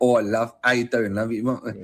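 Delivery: put-on, shown-off Cockney accent. Listing accents for voice-acting work, the speaker shows off a Cockney accent.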